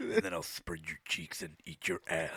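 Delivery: sinister, creepy, breathy horror-movie villain whisper. Redoing a threat told to friends, in a creepy horror-villain voice. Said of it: "You sound like a mix of Freddy Krueger".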